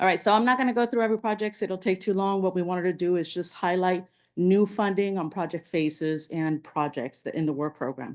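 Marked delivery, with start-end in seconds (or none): 0.0-1.6 fast, hurried rundown. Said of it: "I'm trying to move quickly".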